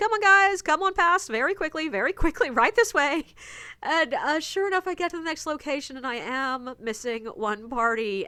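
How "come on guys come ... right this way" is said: quick, high shouting. Retelling calling back to the rest of their guests to move along: retelling shouting. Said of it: "I'm shouting back at the rest of my guests".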